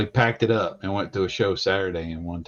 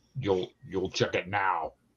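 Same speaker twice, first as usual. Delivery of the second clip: put-on angry voice, quieter; 7 dB quieter than usual. Telling another speaker to check an email now: angry Mahler voice. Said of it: "I need to sound like Angry Mahler".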